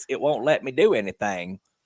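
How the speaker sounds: put-on elderly woman voice. Teasing someone's complaint, imitating an old lady calling for dial-up help. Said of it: "you sound like an old lady calling me".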